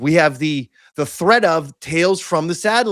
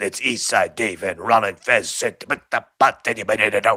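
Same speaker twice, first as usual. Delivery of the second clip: very deep, low-pitched radio-host voice; 7 semitones lower than usual. Doing an impression for the other host: Sleeves impression. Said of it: "That's my Sleeves impression".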